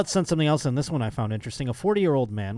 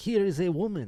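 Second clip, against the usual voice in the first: put-on French accent, pitched up; 6 semitones higher, 3 dB quieter than usual. Imitating hotel staff presenting a woman on the dessert table: put-on French accent. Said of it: "I'm doing French now".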